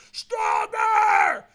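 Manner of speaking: put-on shrill, high scream at full force. Retelling a coach at a firewalk urging more: imitating someone screaming. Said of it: "So he screamed at me".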